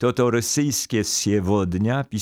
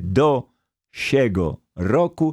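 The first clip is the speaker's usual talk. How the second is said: each of do, siego, roku stressed separately. Showing the phrase was once three separate words: do siego roku, unnatural separate-word stress. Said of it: "teraz tak nienaturalnie zaakcentuję".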